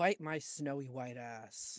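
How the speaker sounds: low, grumbled mutter under the breath. A player's character, after a mental link is cut, mutters under his breath. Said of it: "Just out loud under his breath, Prismius mutters".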